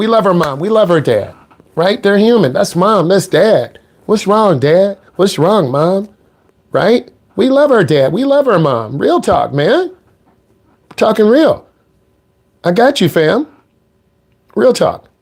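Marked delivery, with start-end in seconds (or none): 7.4-14.9 getting choked up, with a swooping, wavering voice. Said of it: "I'm getting choked up".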